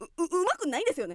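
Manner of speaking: put-on excuse-making voice. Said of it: "モノマネ零点".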